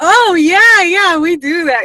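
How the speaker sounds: high, loud, eager yes.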